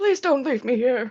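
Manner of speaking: whimpering, begging, raspy voice. Someone locked behind a door begs the departing speaker; raspy whimpering begging. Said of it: "the whimpering, begging in his raspy voice".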